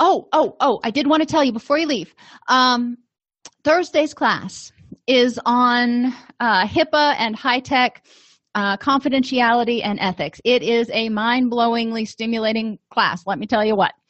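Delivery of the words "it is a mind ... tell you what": ordinary talk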